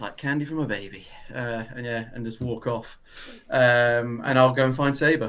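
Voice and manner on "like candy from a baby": low mutter under the breath, quieter. Muttering in character after walking off with a fishing rod: muttering under the breath. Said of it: "mutter under my voice".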